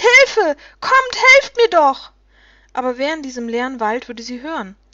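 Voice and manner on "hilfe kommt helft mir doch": very high, very loud, shrill, drawn-out scream. Narrating Mathis's daughter alone in the winter forest, screaming for help. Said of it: "und doch schrie sie".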